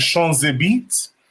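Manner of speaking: put-on French accent. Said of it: "I'm going to say it in his French accent".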